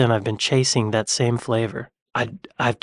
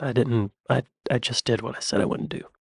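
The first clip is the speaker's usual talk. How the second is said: ordinary delivery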